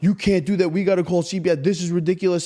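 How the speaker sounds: mock police officer voice, yelling and scolding. Retelling how a senior cop reacted to a left-alone child: imitating a cop yelling. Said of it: "he's, like, yelling at her".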